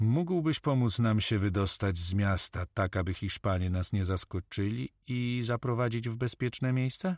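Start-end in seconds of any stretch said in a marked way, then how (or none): none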